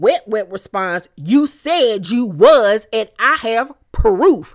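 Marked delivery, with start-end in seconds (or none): 1.2-4.6 big, booming, slow voice. Retelling a reality show argument, quoting Wet Wet's answer: imitating a deep bassy voice. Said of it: "with all the bass up in her little tiny esophagus".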